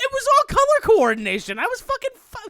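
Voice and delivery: defensive voice shooting very high, swooping. Explaining why he played as Luigi as a kid, voice shooting way up. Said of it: "That voice just went up two octaves".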